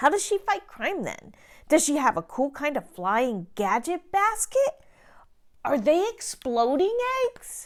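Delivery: skeptical, doubtful cartoon dog voice. A cat reads a story to a dog, who questions it; skeptical dog character voice. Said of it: "[name] reads "The Cat, The Dog, [name], The Exploding Eggs, The Wolf and Grandma." A story read by a cat to a dog, but the skeptical dog has strong issues with its content".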